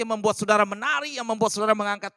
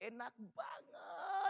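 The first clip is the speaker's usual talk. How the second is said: long, stretched, breathy "banget"; 20 dB quieter than usual. Example of praising a partner's food, with a drawn-out "banget". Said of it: "bangetnya itu ditarik".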